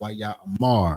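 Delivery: extra weight on the final syllable mar. Explaining stress on the final syllable: stress on final syllable mar. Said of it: "putting that more emphasis on that last syllable, which is the mar".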